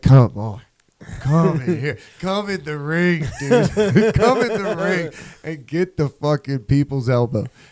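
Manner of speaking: slow, mock angry, pissed-off taunting voice. Voicing a donkey daring coyotes to come in: voicing a pissed-off donkey. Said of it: "Just fucking pissed".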